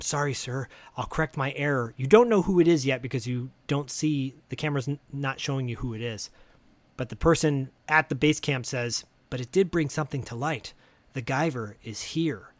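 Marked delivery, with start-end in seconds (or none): 0.0-1.9 hushed whisper. Retelling a film scene, the man on the other end answers, retelling a whispered reply. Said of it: "is whispering".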